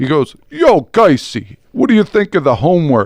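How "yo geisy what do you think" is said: put-on heavy Brooklyn accent, pitched high and swooping. Geisy retells what Tony said to her; imitating Tony's Brooklyn accent. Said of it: "I'll do my impression".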